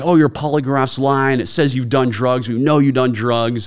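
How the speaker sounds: put-on loud, hectoring, accusing yell. Retelling a polygraph exam where the examiners accused them: imitating polygraphers yelling. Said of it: "they're sitting there yelling at me like".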